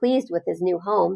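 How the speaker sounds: ordinary delivery, nothing marked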